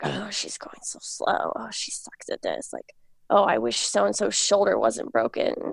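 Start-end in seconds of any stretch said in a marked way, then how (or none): 0.0-2.7 hushed, breathy, whispered grumbling mutter. Retelling how the guys in the back muttered about her; imitating their muttering. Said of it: "the guys in the back were just kind of muttering".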